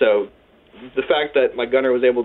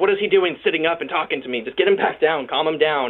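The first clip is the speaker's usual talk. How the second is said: mild, half-shouted sergeant major yell; 4 semitones higher than usual. Retelling how the sergeant major yelled at the medics, acting out the yell. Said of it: "he starts yelling at the medics".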